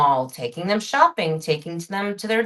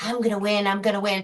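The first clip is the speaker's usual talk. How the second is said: put-on child voice. Retelling a TV episode, imitating the girl who knows everything: Cindy Brady. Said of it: "Cindy's all sitting there like this".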